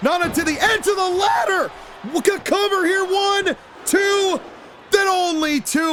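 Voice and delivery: high, drawn-out shocked squeak. Commentating a wrestling match as it happens, voice squeaking in shock. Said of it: "My voice squeaked uh, in shock".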